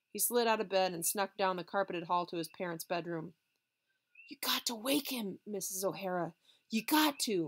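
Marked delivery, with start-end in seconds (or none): 4.3-7.5 whispering, slower. Narrator reads a character who snuck to his parents' bedroom, into the phone: whispered. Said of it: "he whispered into the phone".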